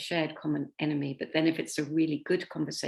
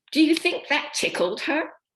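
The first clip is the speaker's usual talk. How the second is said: put-on very high, shrill, loud child voice; 11 semitones higher, 7 dB louder than usual. Retelling a small child's reply in church, imitating a child speaking very loudly. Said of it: "responded very, very loudly".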